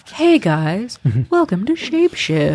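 smooth, calm public radio announcer voice. A game host greets listeners at the start of a show, welcoming them in a calm npr radio voice. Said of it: "That's an NPR voice".

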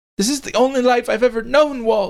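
crying out in a very high pitch. Eve answers Walt as he gets on his motorcycle, crying out. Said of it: "cried Eve".

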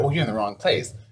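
ordinary talk

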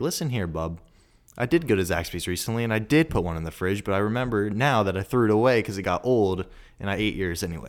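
ordinary delivery

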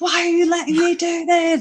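very high-pitched mock yelling. Recalling a chess game with him, retelling a shout at the tv. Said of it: "He was like shouting at the TV".

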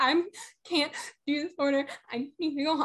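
put-on bawling, hysterical crying, high, sobbing. Retelling what the speaker told a manager, imitating bawling. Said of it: "I'm bawling".

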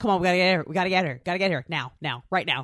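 put-on calm voice with frightened urgency. Imitating the movie character getting others to hurry: imitating Jeff Goldblum's calm fear. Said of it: "Goldblum's just brilliant calm and fear".

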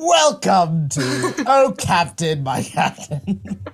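very slow, deliberate, drawn-out host-style delivery. Imitating the co-host opening the show: impression of the other host. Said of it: "He does a very good impression of me".

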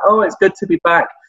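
playful, teasing tone. Retelling how the Big Show opened on his return, retelling Big Show's teasing. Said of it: "kind of started off teasing like".

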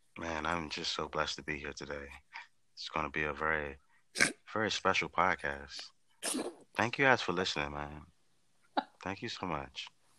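put-on, super smooth, silky voice. Greeting the podcast listeners: super smooth voice.

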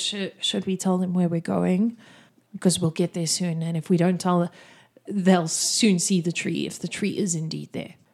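half-whispered, hushed aside. Voicing a character who asks the leader quietly about telling the others: half-whispering. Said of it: "He whispers".

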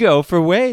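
play-acted, super friendly, very high, very loud, shrill. Retelling answering the radio right after swearing: imitating own super friendly tone. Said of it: "super friendly and, like, happy to help".

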